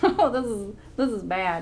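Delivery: giggling and laughing through the words. Sewing a neckline on camera, talking to viewers, laughing. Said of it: "I'm sorry, I'm laughing".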